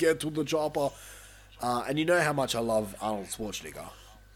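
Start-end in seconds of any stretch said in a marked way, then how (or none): 0.0-0.9 action-movie catchphrase delivery. Quoting an obvious line from the movie: Arnold Schwarzenegger voice. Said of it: "Arnold Schwarzenegger doing his lines".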